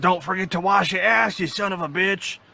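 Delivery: high, screaming wrestler-style ring promo delivery. Speakers describe a talking wrestler soap bar, screaming Stone Cold Steve Austin. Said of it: "It starts screaming at you in the slogans".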